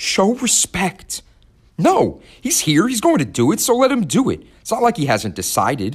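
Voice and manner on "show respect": high, trembling, quivering, unsteady voice. Citra's mother rebukes her in front of the Scythe, voice quivering. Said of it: "Now her mother's voice was quivering".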